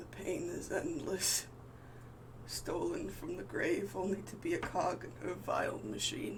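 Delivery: strained croaking voice. A captive figure answers a player character's question, in a strained croaking voice. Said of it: "very strained, uh, and it kind of croaks out".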